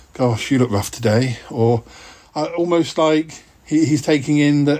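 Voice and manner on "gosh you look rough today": usual speaking voice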